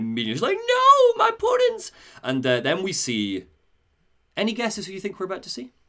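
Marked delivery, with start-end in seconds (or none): 0.6-1.9 put-on shrill, very high, loud, tearful sobbing wail. Retelling a scene where Harley learns the Jokers are dead: imitating Harley screaming in tears. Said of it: "Harley screams and breaks down in tears".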